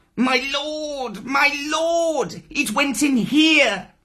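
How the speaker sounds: very high-pitched, squeaky voice. Reading a story aloud, Tabaqui squeaks from behind Shere Khan. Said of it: "Tabaki behind him was squeaking".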